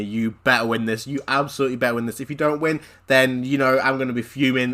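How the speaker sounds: ordinary delivery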